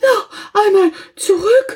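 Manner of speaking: breathless, very high gasp of surprise. The hare, reaching the end of the field, gasps in astonishment, out of breath. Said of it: "japste der Hase erstaunt und schon leicht aus der Puste".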